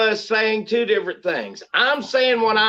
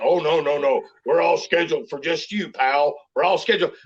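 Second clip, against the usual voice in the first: put-on mocking dumb voice, pitched low; 6 semitones lower than usual. Imitating what the other person said earlier, mocking dumb voice. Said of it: "I'm giving you the dumb voice".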